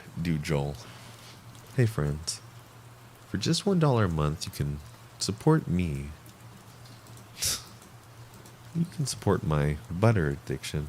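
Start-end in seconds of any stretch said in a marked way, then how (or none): 1.7-10.9 silky, smooth, light, easy voice. Asked to do Joel's outro, doing Joel's smooth voice. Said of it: "He has a very smooth voice".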